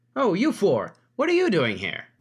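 very high, loud, bubbly chipper voice. Game master voicing someone in the governess's office greeting the party, chipper voice. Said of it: "you hear a chipper voice".

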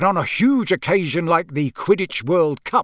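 ordinary delivery

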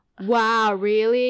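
sarcastic "wow, really". Showing how "wow" changes meaning with intonation: sarcastic "wow, really". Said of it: "You know, sarcasm".

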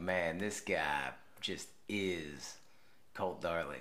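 put-on low, slow hillbilly accent with drawl. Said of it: "talked in that, like, hillbilly accent".

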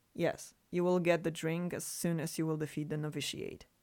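ordinary talk

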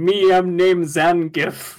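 terrible fake Russian accent, slow and drawn out. Two speakers discuss Zangief; one quotes him introducing himself, bad Russian accent as Zangief. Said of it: "This is just the worst Russian accent".

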